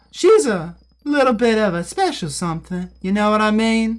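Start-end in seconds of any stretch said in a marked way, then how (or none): 0.1-2.9 small, pitched-up put-on little voice. Needing to pitch a voice up, the speaker tries out a little put-on voice. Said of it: "Maybe a little voice like this".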